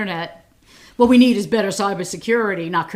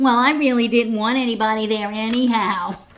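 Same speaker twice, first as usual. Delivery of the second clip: whiny, complaining voice. Mimicking a man's statement about his inauguration, imitating a whiny voice. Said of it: "in his whiny, in his whiny voice".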